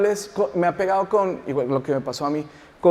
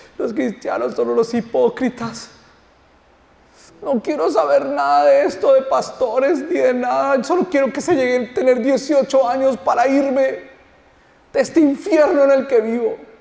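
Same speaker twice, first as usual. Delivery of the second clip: crying, tearful, pitched-up words; 7 semitones higher, 4 dB louder than usual. Retelling what a crying boy said about Christians: imitating a crying boy. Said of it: "Se puso a llorar y me decía".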